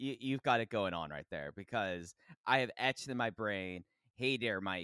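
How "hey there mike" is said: thick, exaggerated put-on Chicago accent. Speaker recalling a greeting etched in memory, thick chicago accent. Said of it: "in the most Chicago accent possible".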